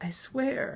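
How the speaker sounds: choked, strangled, breathy whisper. Just released from a man's knife, a woman answers him in a strangled voice. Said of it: "I said in a strangled voice".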